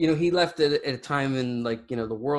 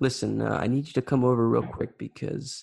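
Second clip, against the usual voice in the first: put-on calm speaking voice. Retelling his request to come over quickly, imitating someone speaking calmly. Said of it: "he would say it in such a calm way".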